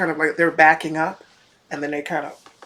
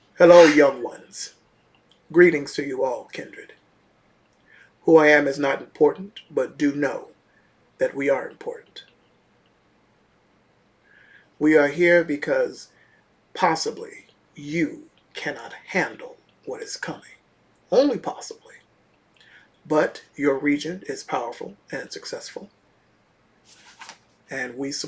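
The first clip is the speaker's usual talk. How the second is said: very deep, weighty, imposing voice. Hooded figure addresses the gathered young ones: very deep, booming voice. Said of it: "speak in a very deep, booming voice".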